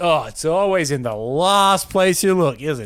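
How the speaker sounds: loud, slow, dry, mocking sarcastic drawl. Discussing how a common saying is meant to sound: sarcastic tone. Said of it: "it's supposed to be like sarcastic".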